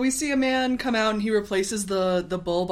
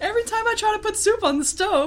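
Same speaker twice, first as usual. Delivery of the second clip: very high, mildly inconvenienced, put-out complaining tone; 14 semitones higher, 4 dB louder than usual. Retelling what a woman said when she came out of the house, mimicking her inconvenienced tone. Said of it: "that's literally like her tone".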